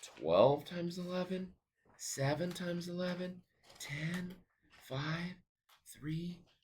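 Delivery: odd put-on voice, high pitched and soft.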